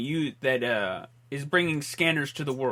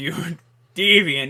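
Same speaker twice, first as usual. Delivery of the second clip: put-on mean, low-toned voice; 3 semitones higher, 9 dB louder than usual. Retelling a movie scene, imitating the doctor: Doctor Paul Ruth low mean tone. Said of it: "lower tone".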